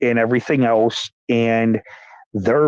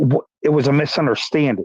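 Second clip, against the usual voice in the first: plain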